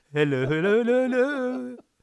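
very high, loud, put-on woman's voice. Asked on air to imitate the absent co-host: Sanchali imitation. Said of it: "That's how she goes".

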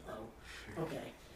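sad, dejected little whisper. Speaker acts out Bo's reaction to being replaced by the podcast: imitating Bo, put-on sadness. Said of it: "Bo just sadly goes".

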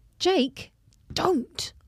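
stage whisper, high pitch. Narrating a story, the reader calls after jake as he goes through the red door, loud whisper. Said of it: "You whisper loudly".

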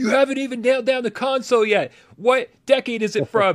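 very high, frustrated, exasperated hollering. Retelling yelling at players on TV from the couch: imitating own yelling. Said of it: "I'm yelling at them".

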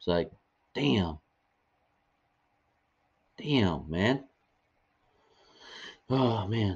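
overcome with emotion, very slow and drawn out. Talking about Kobe Bryant to sports fans before honoring him; getting emotional. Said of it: "getting emotional, guys".

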